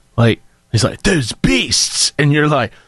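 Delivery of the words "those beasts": put-on poorly done, mangled British accent. Mocking an actor's miscast role: Keanu Reeves bad British accent. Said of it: "Keanu Reeves doing a British accent".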